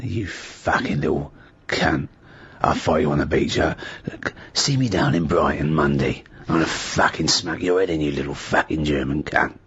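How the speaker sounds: rough, very low, tough, threatening voice. Imagining him rougher sounding and speaking on the front line: rougher-sounding voice. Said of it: "if he was rougher sounding".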